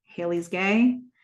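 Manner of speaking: ordinary talk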